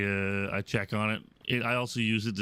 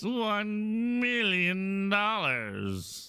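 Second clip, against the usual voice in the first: campy villain voice, very high, swooping, first word drawn out; 11 semitones higher than usual. A gamer mid-play announces an impression, then does a Doctor Evil voice. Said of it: "Doctor Evil voice".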